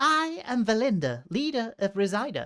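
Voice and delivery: bad, clumsy German accent in a female voice. Narrating a game scene, voicing Valinda as she turns to you, in a bad female German accent. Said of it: "can't do this in a female Germanish accent".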